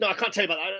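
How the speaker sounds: play-acted guarded, defensive, shutting-down tone. Retelling an interviewee's reply to a military question: imitating a defensive reply. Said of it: "He got really defensive".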